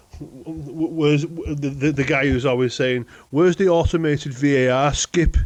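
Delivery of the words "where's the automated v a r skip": terrible put-on Birmingham Brummie accent. Quoting a guy who's always saying this, in a terrible Brummie impression. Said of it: "That's a terrible Brummy impression".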